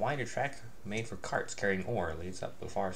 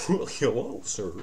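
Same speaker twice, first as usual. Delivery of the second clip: silly, goofy cartoon dog character voice; 4 semitones higher, 6 dB louder than usual. Player speaks as his game character, giving him a Goofy voice. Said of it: "I give him Goofy's voice".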